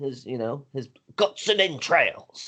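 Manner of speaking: put-on British accent. Retelling a pastor's miracle story, describing the injured man in an attempted British accent. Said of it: "my attempt for a British accent".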